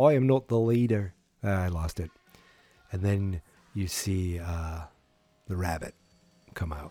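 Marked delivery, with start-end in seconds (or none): 0.0-1.1 put-on light, understated Irish accent. Quoting Finn Balor's line, in a slight Irish accent impression. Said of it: "It's a little bit of an Irish accent".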